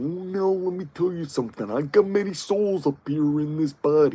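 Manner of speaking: rough, gravelly, gravel-throated pro-wrestler voice. Imagine Ermac walking around and talking in a gravelly Macho Man voice. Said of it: "walk around with Macho Man's gravelly voice".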